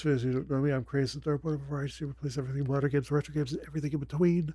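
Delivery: hushed whisper. A streamer welcomes viewers after midnight while people sleep in the house, whispering. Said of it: "I am whispering because it's after midnight".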